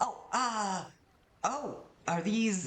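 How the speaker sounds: very high, slow, nervous, halting anxious voice. Storyteller voicing Albert reacting to the scales, anxious Albert voice. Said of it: "And he looks very anxious".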